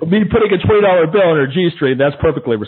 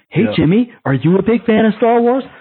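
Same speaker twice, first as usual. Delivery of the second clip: patronizing, condescending, pitched-up talking-down tone; 5 semitones higher than usual. Speaker imitates an adult talking to a kid, in a mock condescending tone. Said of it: "This really condescending, patronizing tone".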